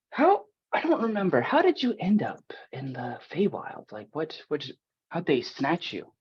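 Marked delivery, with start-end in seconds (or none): 1.4-6.1 whispering, higher pitch. A player's character quietly questions another character, whispering. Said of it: "I'll have like a whispered conversation".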